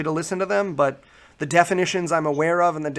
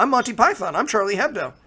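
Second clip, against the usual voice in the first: put-on British accent, pitched higher; 6 semitones higher than usual. Mocking a leader's reply to critics, Richard Dawkins impression. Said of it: "he says it in his lovely British accent".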